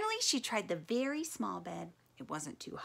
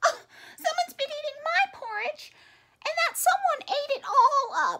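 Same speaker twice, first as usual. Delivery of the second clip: squeaky-voiced speech; 4 dB louder than usual. Reading the three bears story aloud, speaking as Baby Bear, squeaky Baby Bear voice. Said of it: "squeaked Baby Bear".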